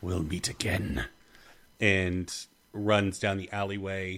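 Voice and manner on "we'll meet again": low, growled, snarling menacing tone. Voicing a fleeing creature answering a player character, snarling. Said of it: "It just snarls at you".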